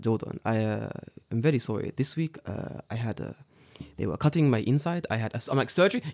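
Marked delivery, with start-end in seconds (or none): 0.0-5.1 acted quiet, gentle man's voice. The speaker imitates Kaoru-san apologizing to him that he cannot fight today. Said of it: "he's a very kind, soft-spoken man".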